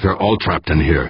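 plain reading voice

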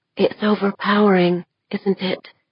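hushed, soft, half-whispered. Deirdre, extending her hand toward Westfall, speaks to her in a half-whisper. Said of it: "she whispered".

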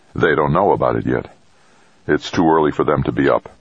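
ordinary delivery

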